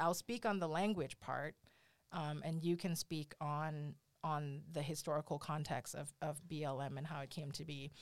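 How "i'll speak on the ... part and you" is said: plain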